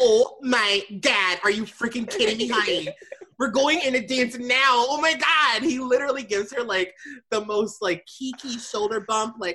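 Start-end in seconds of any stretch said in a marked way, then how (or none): 0.0-5.6 excited character voice, male. Retelling what Tyler said when asked about the music: imitating Tyler. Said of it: "And he goes".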